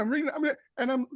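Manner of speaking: put-on nervous, flustered speech. Retelling a stressful moment during a quiet scene, playing one's past self as flustered, imitating nervous speech. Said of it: "panicked, frenetic energy level".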